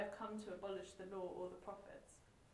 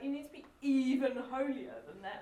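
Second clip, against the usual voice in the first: loud, pointed sarcastic jab, acted out; 4 semitones higher, 7 dB louder than usual. Retelling a jab at the Pharisees: imitating Jesus being sarcastic. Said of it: "you can hear him being quite sarcastic here".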